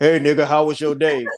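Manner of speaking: loud woman's voice that sounds manly. Comparing how two women sound to a man, imitating a woman who sounds like him. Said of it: "a woman that sounds like me".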